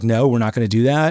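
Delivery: ordinary delivery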